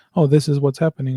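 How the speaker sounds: plain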